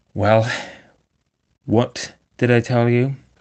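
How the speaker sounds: very cross, irritated, reproachful tone. Narrator reading the rat's reply to the toad, very crossly. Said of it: "said the rat very crossly".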